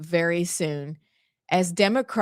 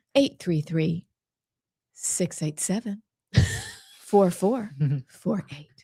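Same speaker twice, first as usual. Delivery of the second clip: put-on flight attendant announcement voice. Hosts reading out their show's call-in number: stewardess voice. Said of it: "that's our best stewardess voice".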